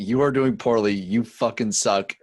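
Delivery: ordinary delivery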